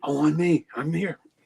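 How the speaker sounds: put-on eager child voice. Retelling wanting to perform in class: imitating an eager kid volunteering. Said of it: "I was always the one that wanted to perform".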